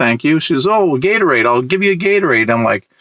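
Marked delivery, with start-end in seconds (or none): 0.7-2.5 put-on Franco-Ontarian accent in broken English. Retelling what a neighbor asked on the street: imitating a broken Franco-Ontarian accent. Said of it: "broken Franco-Ontarian accent".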